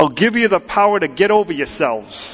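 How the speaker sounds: put-on Brooklyn accent. Imagining how Jesus might put it, a speaker uses a Brooklyn accent. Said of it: "in sort of Brooklyn talk".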